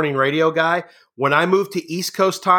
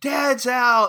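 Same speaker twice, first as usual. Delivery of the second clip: mock children's screaming, higher; 8 semitones higher than usual. Retelling how the two youngest kids yelled when dad came out: imitating kids screaming. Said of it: "my two youngest would scream".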